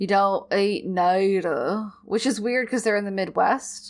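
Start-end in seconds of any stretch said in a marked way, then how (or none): 0.0-1.9 slow, stretched-out, creepy Southern drawl. Describing how Sully acts like he has a set of rules, quote him in a creepy southern drawl. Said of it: "he is like this really creepy southern drawl".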